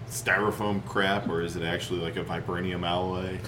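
ordinary talk, nothing marked

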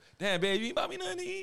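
very high, comic, playful voice. Joking about texting a partner, in a Martin impression. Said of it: "like Martin".

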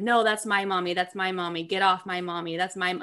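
put-on childlike, playful, jokingly jealous tone. Retelling a stepson's protest when he got jealous: imitating a child's joking jealousy. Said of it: "in a joking way, not in a mean way".

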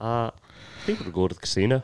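put-on Irish accent. Acting out a scene with others, in an Irish accent. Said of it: "That's Irish".

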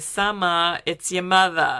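put-on borderline New Jersey accent. Imitating a mother's phone greeting to her daughter: accent sounding like new jersey. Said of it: "That sounds a little like New Jersey".

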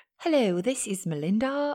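clumsy put-on proper English accent, badly done. Wishing she could talk proper English, the speaker tries it: bad proper English accent. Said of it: "start talking proper English".

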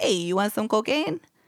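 vague put-on Brooklyn accent. Describing dudes on corners offering cocaine, vague put-on brooklyn accent. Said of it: "I don't know what accent that was".

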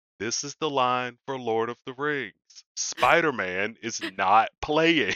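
mock, fed-up, irritated yelling, called out deliberately. Retelling what the ticket taker kept yelling at the line: imitating someone yelling. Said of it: "he constantly was yelling".

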